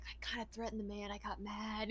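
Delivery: soft, hushed half-whisper, leaning in. Voicing a character who admits to threatening a man: half-whispering.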